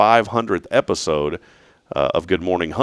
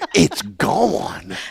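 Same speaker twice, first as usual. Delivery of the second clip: play-acted, very high voice, overcome with feeling; 13 semitones higher than usual. Imitating a man in a supplement commercial: imitating his emotional line. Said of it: "He's like".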